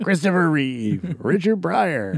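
sportscaster-style voice. Repeating the star names from the trailer: ESPN announcer voice. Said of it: "I sound like the guy from E S P N".

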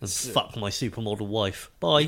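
normal talking voice

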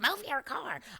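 very high, shrill scream. Retelling a voicemail they left: imitating own screaming. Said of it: "I'm screaming in this voicemail".

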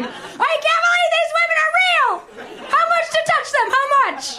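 very high, overjoyed, giddy gushing disbelief. Recalling a visit to a strip club, acting out giddy joy. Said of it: "eyes are falling out of their head from joy".

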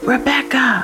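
whispering loudly. Narrator reads a character calling down to rebecca, loud whisper. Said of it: "she called down to Rebecca in a loud whisper".

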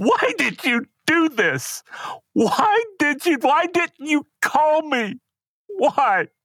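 anguished screaming, very high and slow.

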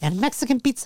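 high Mexican accent. Pretending to order at a drive-thru: Mexi Elmo voice. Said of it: "in Mexi Elmo style".

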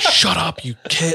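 mock fed-up, angry father voice, scolding, high and slow. Recalling siblings joking during sacrament and their dad scolding them; imitating an angry dad. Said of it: "My dad would be getting so effing pissed".

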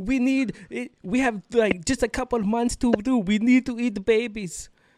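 imitated Russian accent. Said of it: "she has, like, a Russian accent".

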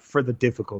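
put-on Greek accent. Quoting a man explaining why he trains so hard: Greek accent. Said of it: "If you can think of like a Greek accent".

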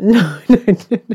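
slow, high, giggling through the words. Answering another speaker's wrong guess, laughing while talking. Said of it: "I don't know why I'm laughing".

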